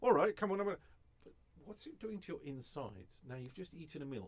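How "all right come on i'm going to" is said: loud, high-pitched angry outburst, temper flaring. Acting out someone losing their temper: imitating someone losing their temper. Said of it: "You lose your temper".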